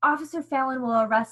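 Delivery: plain reading voice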